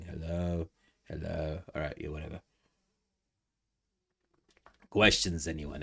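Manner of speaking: hoarse fading voice. Asking viewers for questions while voice fades: losing voice. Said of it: "my voice is going".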